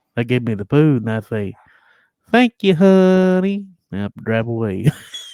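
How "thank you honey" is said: very high, loud put-on old-lady voice. Acting out thanking someone who hands over the food, in an old granny voice. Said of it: "they say that sounded like a granny".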